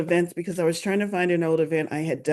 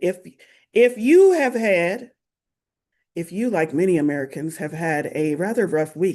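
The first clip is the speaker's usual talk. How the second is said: slick TV infomercial sales-pitch voice. Streamer settles in with viewers, asking about their rough week; infomercial voice. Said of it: "do y'all like my infomercial voice?".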